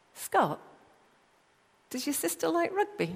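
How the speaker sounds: high, small, piping voice. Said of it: "a little voice piped up".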